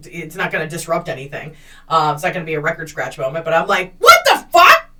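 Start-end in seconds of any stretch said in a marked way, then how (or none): 4.0-4.8 very loud, high, shrill, full-throated shout. Retelling her reaction to an unwanted kiss in a loud nightclub: imitating her own yell. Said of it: "so I'm free to yell".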